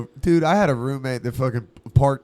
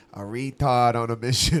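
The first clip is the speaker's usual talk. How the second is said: imitated Boston accent. Quoting a handyman friend's reply to a question: boston accent. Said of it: "It's like Boston accent".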